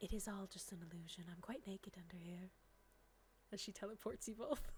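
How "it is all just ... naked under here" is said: soft, close, intimate whisper in character. Voicing a character who pulls someone close: whispering in character. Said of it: "and whispers in your ear".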